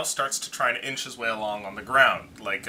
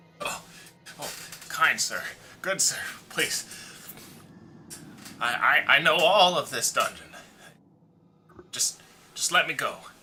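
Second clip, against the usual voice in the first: high, pleading, begging goblin voice; 5 semitones higher than usual. Voicing a wounded, gagged goblin speaking to the party: captured goblin pleading. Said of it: "the goblin ... speaks common".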